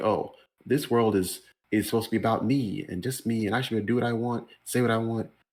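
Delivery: normal talking voice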